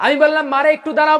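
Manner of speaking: loud, high-pitched crying out.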